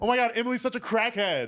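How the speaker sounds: put-on loud, high, drunk-sounding party-girl voice. Doing a voice of a cussing party girl: imitating a cussing party girl. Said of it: "She's like".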